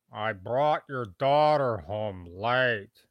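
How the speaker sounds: very loud, booming fatherly dad voice. Doing a voice requested by a donor, dad voice. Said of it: "dad voice".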